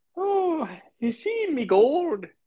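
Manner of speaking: tiny, squeaky, very high-pitched leprechaun voice. Mocking a goofy-looking guy to John, doing a leprechaun impersonation. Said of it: "I got to try to do my Leprechaun impersonation".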